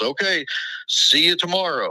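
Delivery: high, hollered yell in a mock waiter voice. Retelling a crowded diner visit as the waiter calls out: imitating a waiter yelling.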